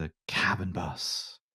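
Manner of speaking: hushed, marvelling, wonderstruck, awed delivery. Showing how the phrase should be read aloud, with an air of wonder. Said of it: "Do it with an air of wonder".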